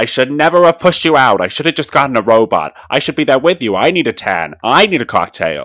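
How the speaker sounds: very loud, angry New York mother voice.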